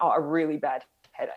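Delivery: ordinary talk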